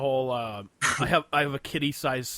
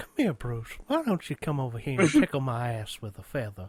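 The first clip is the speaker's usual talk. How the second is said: put-on cartoon old man voice with swooping pitch. Joking about a creepy coworker: old guy from Family Guy voice. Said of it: "like the old guy on Family Guy".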